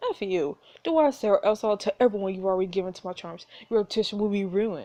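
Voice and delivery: ordinary talk, nothing marked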